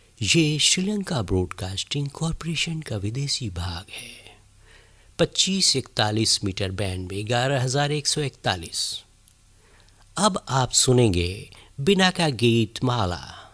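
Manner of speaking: put-on thin-voiced radio announcer voice. Recreating an old radio broadcast opening: imitating radio anchor's thin voice. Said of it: "उसकी पतली सी आवाज़".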